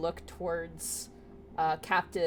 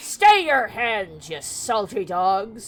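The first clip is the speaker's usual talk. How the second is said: very loud, booming, drawn-out pirate bellow; 4 semitones higher, 10 dB louder than usual. Narrating a game, voicing a figure on the ship's deck, yelling in a pirate voice. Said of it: "You didn't you didn't say he talked like a pirate".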